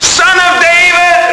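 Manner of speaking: high, slow, loud, drawn-out, desperate shout.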